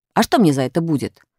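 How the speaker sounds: ordinary delivery, nothing marked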